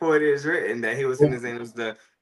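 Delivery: normal talking voice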